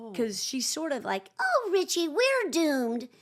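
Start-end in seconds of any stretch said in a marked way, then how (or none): 1.4-3.0 high, slow, drawn-out, sing-song whine. Demonstrating the character voiced for Richie Rich: whiny Gloria voice. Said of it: "she's kind of like a bit of a petulant Bart Simpson".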